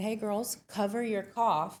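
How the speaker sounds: usual speaking voice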